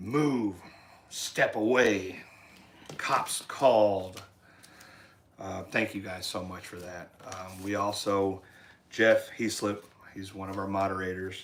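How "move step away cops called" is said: slow, firm, no-nonsense fatherly dad voice. Showing what they'd say through a speaker to someone near the RV, in a dad voice. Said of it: "In your dad voice?".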